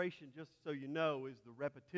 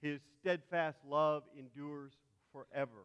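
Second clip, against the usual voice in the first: normal talking voice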